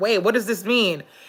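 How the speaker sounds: plain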